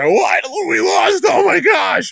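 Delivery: freaking out in shock, high, loud shout.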